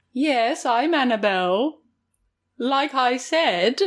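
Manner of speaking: put-on British accent. Imitating a character claiming to be Annabelle: very fake British accent. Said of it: "It's very fake".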